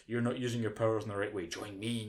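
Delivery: normal talking voice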